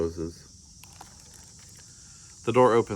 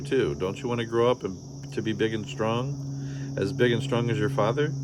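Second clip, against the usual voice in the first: ordinary delivery, nothing marked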